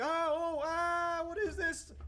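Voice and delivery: very high, very slow, drawn-out startled yell. Retelling how a woman yelled during a Counter-Strike game, retelling a startled yell. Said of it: "So she she yells like".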